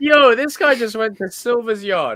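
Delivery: mock excited, high, slow, amazed voice.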